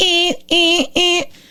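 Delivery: very high-pitched electronic alarm beeps. Imitating a phone alarm in a staged video: imitating an alarm sound. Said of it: "and it goes".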